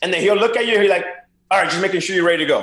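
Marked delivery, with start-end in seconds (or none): 1.5-2.6 intense, intimidating tone. Retelling how an intense manager called a young player over: imitating Lou Piniella calling intimidatingly. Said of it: "he'll intimidate you by just calling you".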